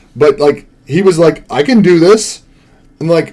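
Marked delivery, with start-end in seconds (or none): none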